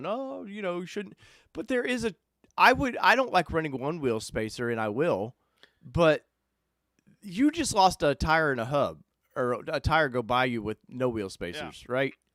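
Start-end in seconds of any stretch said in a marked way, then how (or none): 0.1-1.2 put-on old man voice, high and soft. Talking about wheel spacers, imitating an old man. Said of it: "sounds like old man going".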